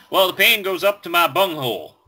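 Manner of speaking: put-on high-pitched Texas drawl. Retelling what a man told his doctor, imitating a Texas accent. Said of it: "In the Texas ha- accent".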